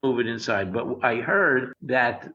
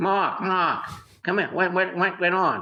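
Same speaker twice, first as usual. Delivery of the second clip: raised-pitch calling-out voice; 6 semitones higher than usual. Telling a story about meeting Jay behind the Comedy Store, imitating Jay's voice. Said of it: "I'll do his voice".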